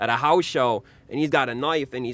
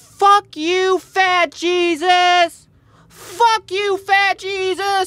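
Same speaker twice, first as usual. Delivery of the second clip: put-on very high, very slow, loud, drawn-out child's yell; 7 dB louder than usual. Recounting a young boy in the front row, speaker imitates a kid yelling. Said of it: "he keeps yelling at Ron".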